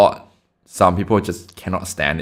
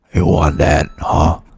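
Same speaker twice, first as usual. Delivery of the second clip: fake deep voice, louder; 2 semitones lower, 5 dB louder than usual. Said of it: "Just put the mic in the mouth for the deep voice".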